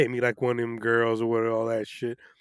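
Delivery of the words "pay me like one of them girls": ordinary talk, nothing marked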